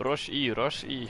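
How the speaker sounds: very drawn-out, slow, fake Russian accent. Calling out to a teammate during a game: put-on Russian accent. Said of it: "why you're using a Russian accent".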